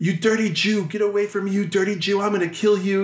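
hateful, contemptuous, high-pitched shouted yelling. Retelling a story, imitating a man yelling at the kid.

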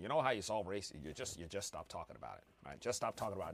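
very low, deep voice dropped way down. Quoting a meme about solving race: Morgan Freeman voice. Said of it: "that's my Morgan Freeman voice".

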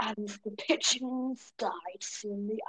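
nature documentary narrator voice. Answering praise for an impression by narrating about pigeons: David Attenborough impression. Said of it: "You do a good David Attenborough impression".

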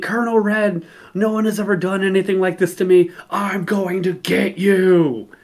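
toned-down, mild yelling. Telling a story about a fight with a wrestler, retelling someone yelling. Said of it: "And he's yelling".

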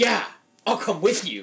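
put-on lofty, superior tone. Retelling a scene, act out her offer to come downstairs with him, mock high and mighty. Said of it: "all fucking high and mighty".

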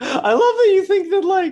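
very high-pitched, very loud voice. Joking about Oxford test results with another speaker, in a high voice. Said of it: "sorry, my voice is high".

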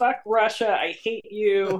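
mock, high, mild, restrained yelled outburst. Retelling how he opened the window between takes: imitating someone screaming. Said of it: "opened the window and started screaming".

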